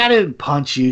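ordinary delivery

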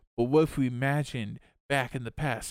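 ordinary talk

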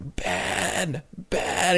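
put-on whispered, breathy old man voice. Describing a film scene where a man runs after another in the rain; old man voice. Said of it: "old man voice".

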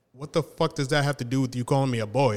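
normal talking voice

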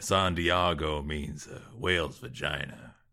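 gruff, low-pitched, very slow drawn-out delivery. Trying a quick impression to tell a joke: gruff Ron Perlman impression. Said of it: "That wasn't really a very good Ron Perlman impression".

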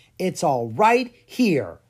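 proud, triumphant declaration. Lucas answers Clara's doubt about the book, proud. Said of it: "he said proudly".

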